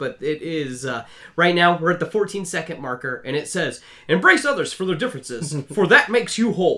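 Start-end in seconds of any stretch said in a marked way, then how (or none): 4.1-6.8 put-on transatlantic narrator voice. Reading the on-screen quote aloud: Clone Wars narrator voice. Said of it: "I'll do my best to do the Clone Wars voice".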